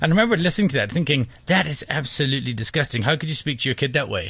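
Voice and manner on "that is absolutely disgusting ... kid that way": ordinary delivery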